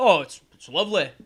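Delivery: terrible, clumsy fake English accent. Retelling what English relatives said after visiting Manistee, Michigan: terrible English accent impression. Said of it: "It's a terrible impression".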